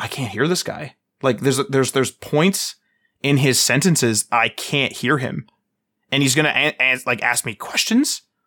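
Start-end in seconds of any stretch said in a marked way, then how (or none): 0.0-0.9 put-on frantic, panicked, freaking-out blurt. Retelling what they thought during an interview: retelling own panic. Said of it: "panicking, being like".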